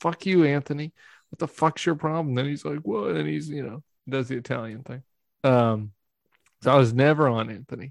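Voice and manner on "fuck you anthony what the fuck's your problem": put-on screaming. Retelling yelling at a man in the bathroom, retelling a scream. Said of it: "I'm screaming at him".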